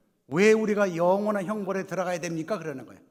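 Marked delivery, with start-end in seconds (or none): 0.3-2.6 loud, angry, raised voice. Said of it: "막 화를 내는 거예요".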